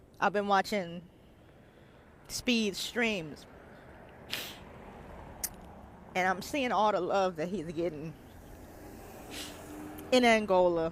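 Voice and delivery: crying while talking. Telling viewers about watching streams and the love shown: crying while talking. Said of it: "Y'all probably wondering why I'm crying".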